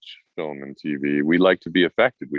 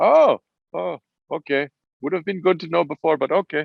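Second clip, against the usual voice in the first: very high, horrible fake Swedish accent; 11 semitones higher than usual. Speaker quotes two Swedish directors reacting, in a horrible Swedish accent. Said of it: "That was a horrible Swedish accent".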